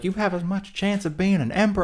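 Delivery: put-on Southern accent, pitched very high. Telling the story of Caligula at Baia, slipping into a Southern accent. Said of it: "I don't know why I'm doing Southern accent".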